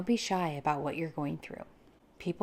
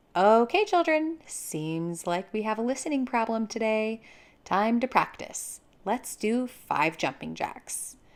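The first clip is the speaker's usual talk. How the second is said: light, game-like, playful, raised and pitched-up voice; 5 semitones higher, 6 dB louder than usual. Showing how to answer children who aren't listening: playful. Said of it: "Playfully respond by saying".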